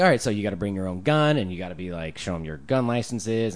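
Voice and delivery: ordinary talk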